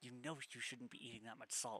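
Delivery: soft, hushed half-whisper. A character leans down to another character with advice: half-whisper. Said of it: "she kind of whispers down to Bellamy".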